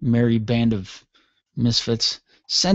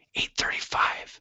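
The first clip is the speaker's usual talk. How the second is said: very soft, hushed whisper. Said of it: "why are we whispering?".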